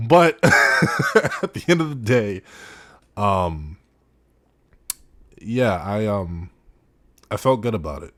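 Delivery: slow, choked-up voice catching with emotion. Speaker recounting reaching out to someone who responded, getting choked up. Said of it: "I'm getting kind of choked up talking about it now".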